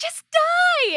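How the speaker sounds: play-acted, very high, tiny little-girl shriek. A voice actor recreating a fight-scene scream as Shino, screaming tiny-girl voice. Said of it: "She screams at one point".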